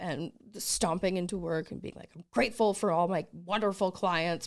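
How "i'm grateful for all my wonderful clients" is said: acted grumpy, moody tone. Describing stomping into work, acting out being in a mood. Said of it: "but I'm like in a mood".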